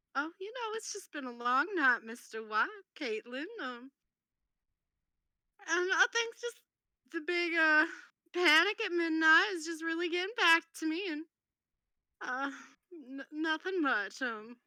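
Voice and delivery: crying through the words, tearful, high-pitched. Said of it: "'cause she's crying".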